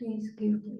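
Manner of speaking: timid, meek, quiet voice. Showing the demeanor of a taker who keeps asking: sad, scared wanting person. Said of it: "Doesn't even have the voice to say".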